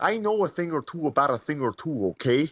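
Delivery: slightly off put-on Minnesota accent. Describing an actor's try at a regional accent, as Robert De Niro's Minnesota accent. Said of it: "Bobby De Niro doing a Minnesota".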